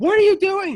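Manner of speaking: piercing, shrill, full-volume horrified scream. Recalling listening to the story in the shower, retelling own screaming. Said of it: "I was, like, screaming".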